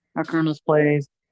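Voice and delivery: normal talking voice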